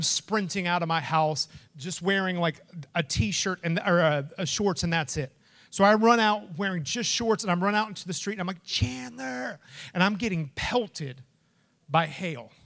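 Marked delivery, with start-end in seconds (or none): 8.6-9.6 play-acted, high-pitched screaming. Running out into the hail after losing chandler, the speaker retells a scream. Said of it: "And I'm just screaming".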